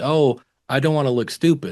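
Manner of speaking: ordinary talk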